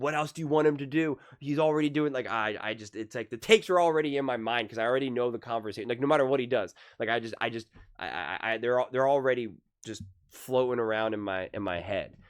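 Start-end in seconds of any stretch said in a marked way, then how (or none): 0.0-2.1 loud, higher-pitched yell. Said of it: "we get to just yell".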